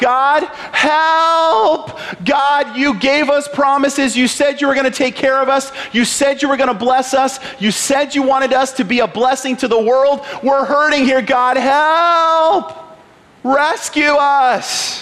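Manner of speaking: put-on crying out. Retelling how oppressed slaves cried out to god; retelling a cry to god. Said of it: "They just cried out to God".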